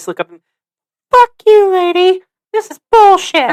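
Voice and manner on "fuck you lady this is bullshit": put-on very high, loud six-year-old child voice. Speaker retells what they wanted to say as a child, in a little six-year-old's voice. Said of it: "in my little like six or seven year old like voice".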